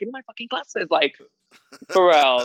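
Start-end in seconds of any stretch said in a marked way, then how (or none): 0.0-0.9 cool, composed, soft, calm tone. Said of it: "So calm".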